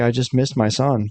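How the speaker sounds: ordinary talk, nothing marked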